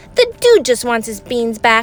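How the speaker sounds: usual speaking voice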